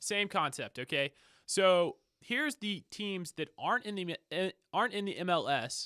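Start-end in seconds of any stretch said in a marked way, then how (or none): 1.5-5.9 excited stutter, animated and swooping in pitch. Introducing the teams outside the MLS, with excited stuttering. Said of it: "I'm sorry for stuttering. I just got excited".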